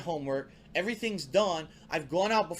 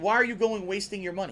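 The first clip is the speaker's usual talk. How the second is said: imitated yelling voice. Retelling how parents reacted to saving for tournaments: imitating parents yelling. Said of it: "they would yell at me".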